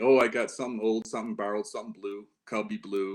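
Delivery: ordinary delivery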